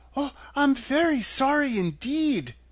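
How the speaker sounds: frightened, sorry tone. Dorothy speaks to the melting witch, frightened. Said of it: "truly frightened".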